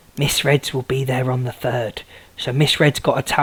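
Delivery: low, soft, under-the-breath half-whisper. Talking to viewers about a towel on the way, half-whispering. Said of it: "I don't know why I'm whispering".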